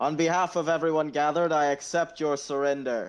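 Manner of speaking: booming announcer-style yell. Marlowe steps out from behind a tree, weapon down, Marlowe booming very loud. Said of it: "he just booms his voice very loud".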